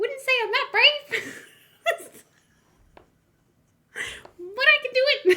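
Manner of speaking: loud, very high, squeaky little mouse voice. After giving up on one impression, trying a little mouse voice instead. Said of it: "I'm gonna get my little mouse voice".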